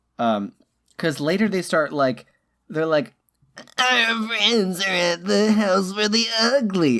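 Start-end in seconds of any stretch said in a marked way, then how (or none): 3.8-7.0 strained, high, drawn-out throat-straining put-on voice. Showing how the characters in a Pokemon movie talk, throat-straining put-on voice. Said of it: "that's all that voice I'm gonna do because it hurts my throat".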